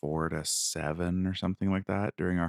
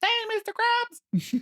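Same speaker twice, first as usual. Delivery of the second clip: very high, full cartoon voice; 4 dB louder than usual. Acting out cartoon lines as they came up on screen, SpongeBob voice. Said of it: "SpongeBob comes up and he's like".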